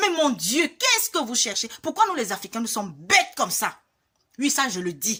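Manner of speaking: openly angry, heated scolding tone. Addressing fellow Africans about curse-spreading chain videos, openly angry. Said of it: "Parce que je suis en colère".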